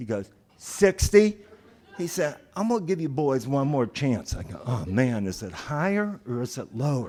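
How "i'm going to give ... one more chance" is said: terrible fake Southern cop voice, faster. Speaker retelling what a cop told him and his friend, bad southern accent. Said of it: "the worst impression of a Southern accent".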